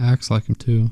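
ordinary delivery

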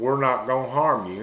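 ordinary delivery

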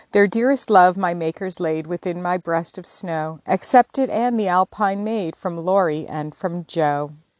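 ordinary delivery

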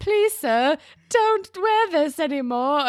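put-on high, loud British accent. Retelling a commentator's remark on a shirt, in an Oliver Twist British accent. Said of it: "He like has a British accent".

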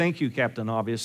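low, dry, sarcastic delivery.

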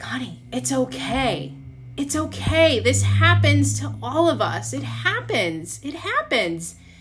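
gentle soothing voice. Retelling how a stranger walked her to the sink, imitating a soothing stranger. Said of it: "stranger comforting sobbing woman in restroom".

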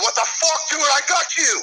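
very high, raw, screamed outburst. Retelling a moment in the tower, acting out a unit member screaming. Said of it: "Fucking O'Hara's screaming".

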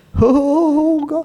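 very high drawn-out moan. Mimicking people who moan so god hears them more: mock moaning. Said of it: "you feel like God hears you more if you moan a little bit".

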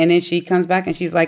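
plain

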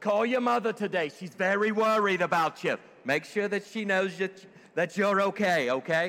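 Yiddish-influenced English accent.

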